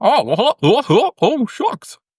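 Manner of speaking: loud, squeaky, very high, dopey cartoon-style voice. Asked to do a Goofy impression, trying it out, Goofy voice. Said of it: "Give us a Goofy".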